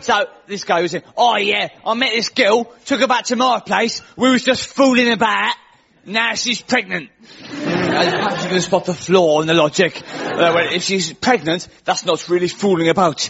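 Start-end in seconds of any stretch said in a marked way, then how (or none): 1.2-7.1 put-on Essex bloke's accent, pitched up. Retelling what a guest on a TV show said: imitating an Essex accent. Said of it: "I've got to get the accent".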